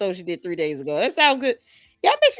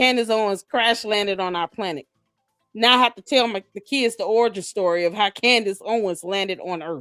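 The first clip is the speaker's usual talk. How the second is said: plain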